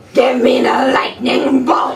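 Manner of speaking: very loud, growling, slow drawn-out bellow. Asked to show a Fury power, performing the line: growly Fury voice. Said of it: "Growly, special Fury voice".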